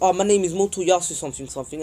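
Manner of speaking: ordinary talk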